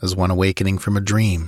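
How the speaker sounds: ordinary delivery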